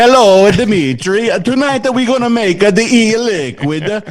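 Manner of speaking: loud, fake Italian accent.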